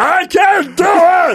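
loud shout, pitched way up. A father imitates how his son talked to him, in a Cookie Monster voice. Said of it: "sounded like the Cookie Monster when he talked to me".

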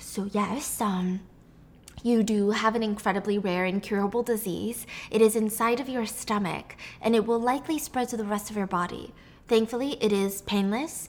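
ordinary talk

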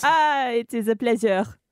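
put-on French accent. A podcast co-host answers the host's welcome in a fake french accent. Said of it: "Jules, you do French".

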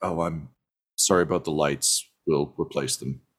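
very low, quiet mumble under the breath. Speaker describes a character on a ship during a drill: imitating her muttering. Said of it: "kind of mutters like".

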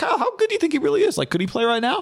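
eager, nosy, quick high voice. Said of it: "ask questions like a fan".

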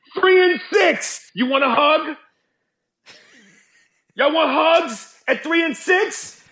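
acted high shouting. Asking the young generation whether they want hugs: yelling. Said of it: "you're yelling that at them".

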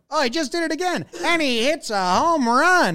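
very high-pitched, slow, drawn-out broadcaster call. Retelling a broadcast call of a home run: imitating Buck Martinez. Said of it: "What voice was that?".

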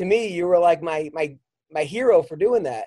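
ordinary talk, nothing marked

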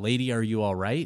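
put-on, loud, hollered call-out. Storyteller retells a man calling out to a woman he sees, retelling a yell. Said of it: "he yells out".

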